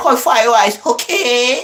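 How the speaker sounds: high, slow, drawn-out order-taker voice. Saying the line again for his dad: imitating the Louisiana chicken lady. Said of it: "say it again".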